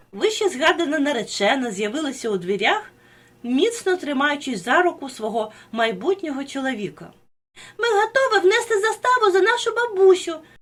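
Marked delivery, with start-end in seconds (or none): 7.8-10.4 eager cry, very high in pitch. The bride, appearing in the doorway, exclaims as soon as she sees them. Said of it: "вигукнула вона".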